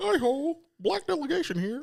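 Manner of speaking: high cartoon frog puppet voice. Joking about a pitch-changed microphone: Kermit the Frog voice. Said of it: "like Kermit the Frog".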